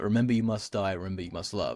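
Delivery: ordinary delivery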